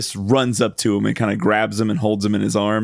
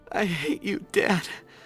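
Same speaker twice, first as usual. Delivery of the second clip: mock tearful voice, as if speaking through tears; 9 semitones higher, 8 dB quieter than usual. Recapping a game scene, acting out Titus speaking to his dad: imitating speaking through tears. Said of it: "he's saying it through tears".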